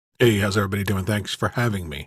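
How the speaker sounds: smooth, easy delivery. Guest greeting the show's hosts after being welcomed, coming in smooth.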